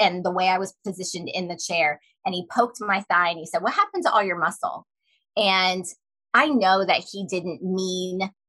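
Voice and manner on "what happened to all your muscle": ordinary delivery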